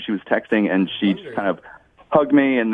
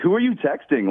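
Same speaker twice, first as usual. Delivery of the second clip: loud, rude near-yell, pitched high; 8 semitones higher than usual. Retelling snapping at a date who was on her phone: retelling own loud rude question. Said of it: "I kinda yelled".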